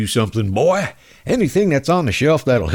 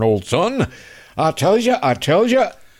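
put-on cartoon rooster voice, higher; 5 semitones higher than usual. Retelling a congressman's questioning in a Foghorn Leghorn voice. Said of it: "he started talking like a foghorn leghorn".

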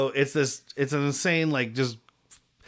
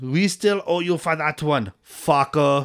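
slow, thick, bad Austrian-accented English, drawn out. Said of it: "in his even worse English than Van Damme".

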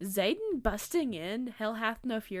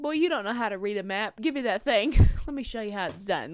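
loud, authoritative, sassy delivery; 7 dB louder than usual. Retelling a character talking down to the army men: imitating Riddick's sass. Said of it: "trying to basically sass the army men".

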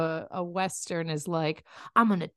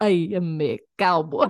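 Russian accent, spoken louder; 4 dB louder than usual. Asked how Stalin would say the line, the speaker answers: Stalin Russian accent. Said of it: "You have a great Russian accent".

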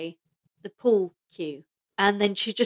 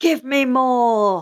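acted out commanding scream, stretched out more; 4 semitones higher, 4 dB louder than usual. Recounting a scene, the speaker acts out the Master: imitating the Master screaming. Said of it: "And he's screaming".

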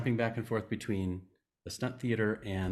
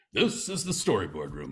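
announcing like a news anchorman; 3 semitones lower than usual. Retelling how the tour film introduced the storyboard room: Cronkite impression. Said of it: "that's a good impression".

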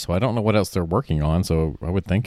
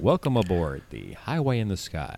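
monorail announcer voice with swooping pitch; 5 dB quieter than usual. Taking turns doing monorail voices, imitating the announcer in monorail announcer voice. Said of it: "That was my favorite monorail voice".

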